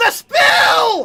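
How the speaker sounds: shouted character voice. Narrating to the players as a wooden house shakes: Watashi shouting. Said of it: "you hear Watashi shout".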